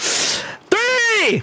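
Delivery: shrill, very high screaming. Counting down to a spin: screaming. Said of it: "as I continue to scream".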